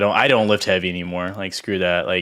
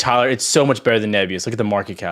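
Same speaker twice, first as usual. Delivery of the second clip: ordinary talk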